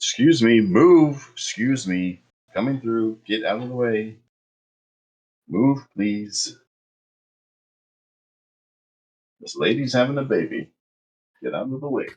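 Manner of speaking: high pushy calling. Playing K six pushing through a crowded doorway: voicing K six. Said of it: "K six is just like".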